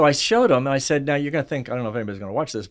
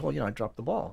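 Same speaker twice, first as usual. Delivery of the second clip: mock sheepish, very soft and quiet; 11 dB quieter than usual. Retelling how a player answered after dropping a pass: imitating a sheepish reply. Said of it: "he kinda looks back at me sheepishly and he goes".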